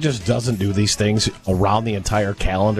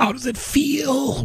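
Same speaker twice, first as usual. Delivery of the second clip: put-on spiteful, venomous tone. Retelling what one would say, venom in voice: imitating a spiteful line. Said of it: "say spitefully".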